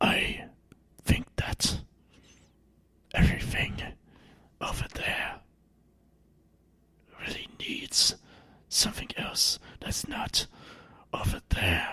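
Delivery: airy, whispery, breathy put-on character voice. Asked what Echo would say, answering in Echo's voice. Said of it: "I can actually do the Echo's voice".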